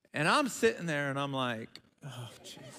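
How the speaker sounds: usual speaking voice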